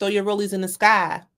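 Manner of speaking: ordinary talk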